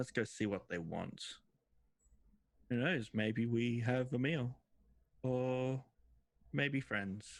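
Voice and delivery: mature-sounding creature voice. Speaker voices a second member of a group asking their boss what to do, more mature deeper voice. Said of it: "a more mature voice, probably a little bit deeper".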